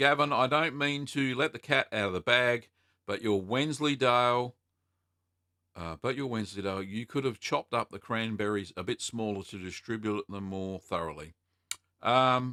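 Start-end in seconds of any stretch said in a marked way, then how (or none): none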